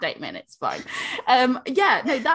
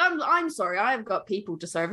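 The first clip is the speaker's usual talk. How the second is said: ordinary talk, nothing marked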